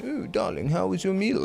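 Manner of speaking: soft, high, refined, sophisticated posh voice. Explaining how to eat, speaker acts out talking like a sophisticated person. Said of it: "you eat and you talk like a sophisticated person".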